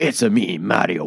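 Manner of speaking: edgy, very slow, drawn-out drawl. Imitating a more edgy take on the Mario line: Star-Lord voice as Mario. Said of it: "just sort of just speaks like Star-Lord, just as Mario".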